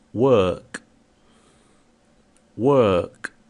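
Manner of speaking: loud British work with the R dropped.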